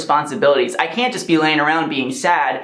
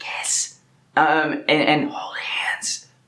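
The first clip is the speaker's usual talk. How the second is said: whispered, hushed, much slower and quieter; 5 dB quieter than usual. Speaker talking about struggling with people in general, dropping to a whisper.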